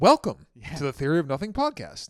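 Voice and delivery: sing-song, swooping, lilting swing. Doing an impression of the co-host opening the podcast. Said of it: "an impression of you opening the podcast".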